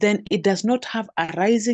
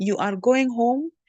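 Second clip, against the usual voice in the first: voice rises at the end, on home; 4 semitones higher than usual. Teacher demonstrating question intonation, with a rising question intonation. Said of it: "that has a rising intonation".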